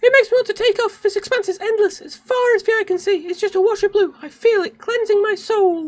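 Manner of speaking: squeaky delivery. After apologizing to viewers for the voice, the speaker muses aloud in a squeaky voice. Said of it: "my really appalling squeaky voice".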